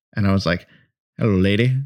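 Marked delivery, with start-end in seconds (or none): 1.2-1.8 put-on western cowboy voice. Retelling how they talked to their wife: imitating own put-on Western cowboy talk. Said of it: "talking, like, Western to my wife".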